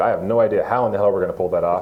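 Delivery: ordinary talk, nothing marked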